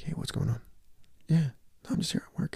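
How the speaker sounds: hushed, breathy whisper under the breath. Retelling a phone call at work, imitating own whispering. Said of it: "because I'm whispering".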